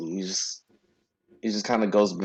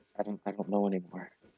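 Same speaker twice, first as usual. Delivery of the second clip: very soft, low muttering. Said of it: "you're kind of muttering".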